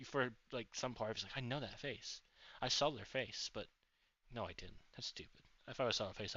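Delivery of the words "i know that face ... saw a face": usual speaking voice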